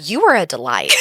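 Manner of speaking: usual speaking voice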